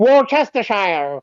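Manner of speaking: put-on American accent with an Irish sound. Speaker imitating how Americans pronounce Worcestershire, in an Irish-sounding American accent. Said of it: "Why have you turned Irish to do uh, an American accent".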